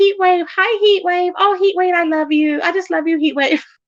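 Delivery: teasing, gushing, high mocking parody voice. Retelling how a friend mimicked her, imitating a friend mocking her. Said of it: "she was like mocking me".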